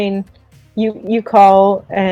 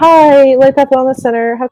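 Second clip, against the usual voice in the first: put-on girl's voice, much higher, louder; 6 semitones higher, 5 dB louder than usual. Describing a phone call to a listener, acting out a girl's voice answering phone. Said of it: "you hear just like a girl's voice saying like".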